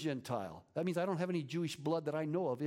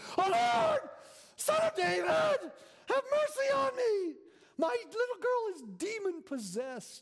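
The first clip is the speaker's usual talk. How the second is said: mock screaming, screeching, very high and drawn-out; 5 dB louder than usual. Acting out a mother crying out to the lord, a put-on screeching plea. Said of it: "She's saying it this way".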